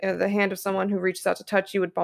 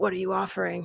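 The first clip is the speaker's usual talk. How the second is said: slightly lowered, masculine-sounding voice; 4 dB quieter than usual. Game master voicing a disguised character's question, voice pitched down, more masculine. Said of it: "pitches her voice down a little bit to sound a little more masculine".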